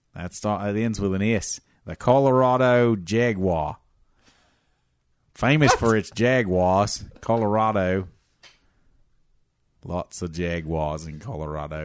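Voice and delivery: put-on Australian accent. Guessing sports team names with others, answering in a put-on Australian accent. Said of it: "Not sure why you're Australian right now".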